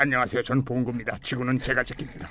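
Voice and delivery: very low, soft, dopey, goofy cartoon voice. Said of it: "봉구는 이거 한 번도 못 본 건데".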